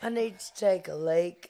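put-on dog voice with British accent. Voicing a dog who begs Mommy: British accent voicing a dog. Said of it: "pretty British boy".

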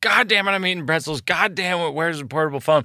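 mock exasperated angry dad. Retelling a joke about a dad who got angry: imitating an angry dad. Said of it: "he would get so angry".

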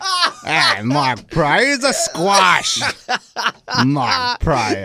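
put-on high-pitched old Chicago factory guy voice. Mocking another speaker's remark about a player, old Chicago factory guy voice. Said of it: "You sound like the old dude at the factory in Chicago".

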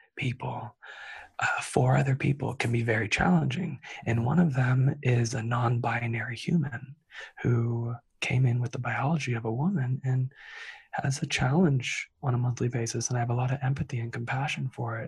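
whispered voice. Answering a question, keeping roommates from hearing, whispering. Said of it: "I'm going to whisper because I have roommates".

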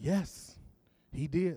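quiet whisper. Telling a church joke, the mother answers her daughter: retelling a quiet whisper. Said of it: "The mother quietly whispered back".

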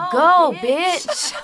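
put-on high, loud, tiny little toddler voice. Retelling what a 2-year-old said from the back after a honk: imitating Stevie's toddler voice. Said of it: "this little 2-year-old voice from the back go".

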